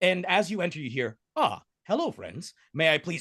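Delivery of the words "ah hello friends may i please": glitchy voice with swooping pitch. Describing a caged being greeting the players, voiced as glitchy Neil deGrasse Tysotron. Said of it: "it sounds exactly like his current voice, except a little bit glitchy".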